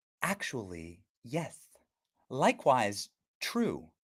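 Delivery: slow, drawn-out, very low, soft put-on voice. Talking about closing the border, a Kamala Harris impression. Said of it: "This is my impression of Kamala Harris".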